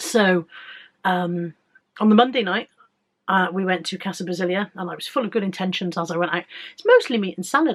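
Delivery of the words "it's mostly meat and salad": high, loud, upbeat and self-assured. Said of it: "I said".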